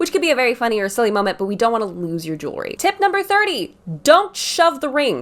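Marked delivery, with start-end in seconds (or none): 2.8-5.2 slow, drawn-out, high shouted yell. Giving wedding ring tips, the speaker announces tip number thirty: yelling. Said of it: "I'm sorry for yelling you".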